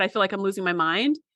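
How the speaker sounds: normal talking voice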